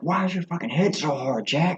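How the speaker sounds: mock very high-pitched, shouted, taunting yell. Retelling what a fighter shouted at his opponent mid-fight: imitating Sean Strickland yelling. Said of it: "he's just yelling at, at the end".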